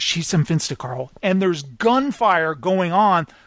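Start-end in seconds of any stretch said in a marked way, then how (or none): 0.0-1.1 put-on quiet voice, much lower. Retelling a man speaking to Carl amid gunfire, imitating someone speaking quietly. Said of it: "he's saying it quietly".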